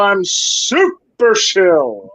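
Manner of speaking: slow, stretched-out, boastful super-villain voice.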